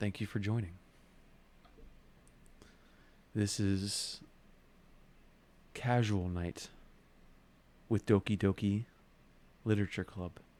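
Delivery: chill, relaxed, laid-back voice. Streamer welcoming a viewer to Casual Night on stream, in a chill voice. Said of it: "Talking in my chill voice for you".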